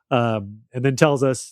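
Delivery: normal talking voice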